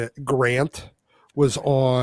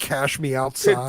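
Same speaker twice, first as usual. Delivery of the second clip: ordinary delivery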